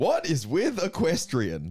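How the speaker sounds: stand-up comedian delivery. Reading a joke from notes as asked: stand-up comedy intonation. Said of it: "in the intonation of a stand-up comedy".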